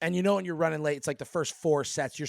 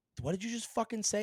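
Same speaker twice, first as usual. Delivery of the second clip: high, fast, rattled-off mock angry outburst; 6 semitones higher, 6 dB quieter than usual. Retelling confronting a man he thought said his name, retelling snapping angrily. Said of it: "I just I I snapped".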